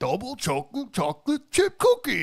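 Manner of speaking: goofy, very high-pitched voice. Imitating how a viral video's subject says his catchphrase: Cookie Monster-like voice. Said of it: "it's like the fucking Cookie Monster".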